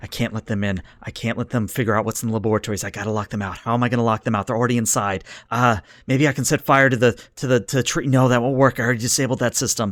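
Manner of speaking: hushed whisper, muttering under the breath. Narrator voices a man watching camera feeds, whispering to himself. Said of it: "he's whispering to himself".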